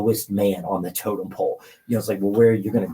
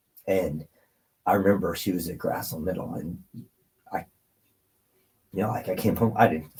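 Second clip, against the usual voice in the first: emotional, choked up, voice catching; 3 dB quieter than usual. Telling a family story about his sister, choked up and emotional. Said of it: "Sorry, I'm getting emotional".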